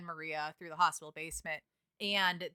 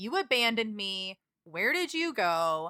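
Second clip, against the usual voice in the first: mock angry, reproachful, accusing outcry. Recounting a story where a woman found in a hospital basement yells at him, retelling a yell. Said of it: "yells at him saying like".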